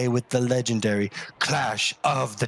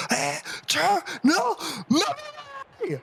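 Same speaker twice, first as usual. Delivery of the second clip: put-on drunken screaming and yelling, pitched higher. Voicing a drunk character cheering at the announcement: drunk character screaming.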